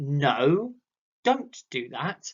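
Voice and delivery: the word no hit hard and emphasized. Explaining emphasis in speech with an example: strong emphasis on the word no. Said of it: "I emphasize no".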